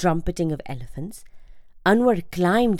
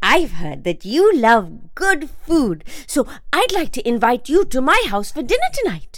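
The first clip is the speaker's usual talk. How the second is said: cheerful, upbeat, bright and loud; 6 semitones higher, 5 dB louder than usual. Anwar, a boy in the crowd, addresses the emperor, cheerfully. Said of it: "Anwar cheerfully continued".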